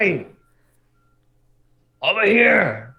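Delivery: very high, very loud shout in dragon language. Calling out to a dragon head: shouting in a Draconic voice. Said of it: "Shout in this Draconic voice".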